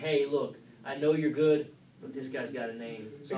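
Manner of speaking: ordinary delivery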